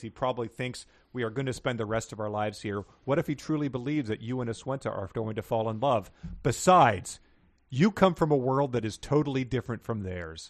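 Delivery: ordinary talk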